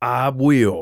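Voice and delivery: curt, growled voice. Answering a condescending woman before confronting his brother, growled. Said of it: "I growled".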